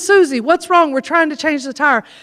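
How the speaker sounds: ordinary delivery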